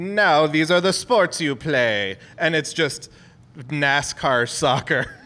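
put-on alien accent that sounds half Italian. Imagining confused aliens talking to humans, in an alien accent. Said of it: "I like your alien accent".

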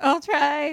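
voice cracking, squeaking up high. Retelling a scene, quoting Christine's reply: imitating Christine's voice crack. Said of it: "Voice crack, voice crack".

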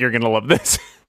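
mock sarcastic tone. Explaining an earlier remark to the others: retelling a sarcastic line. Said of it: "that was the sarcastic".

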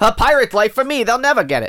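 high, piratey put-on pirate voice. Riffing on Will Smith as a pirate, do a Will Smith pirate voice. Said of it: "Will Smith, the pirate".

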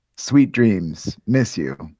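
acted, slightly douchey male tone. Reading his text messages aloud in his role: acting a little douchey. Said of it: "I'll try to be, like, a little douchey".

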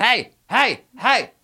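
shouting hey.

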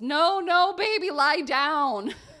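shrill, booming, very loud, high, drawn-out yell. Retelling how a man on a train yelled at a baby: imitating a yell. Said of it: "he yells".

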